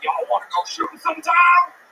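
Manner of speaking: high-pitched honky-tonk cowboy voice. Retelling what two cowboys said at a honky tonk: imitating cowboys. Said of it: "These two cowboys come up to us".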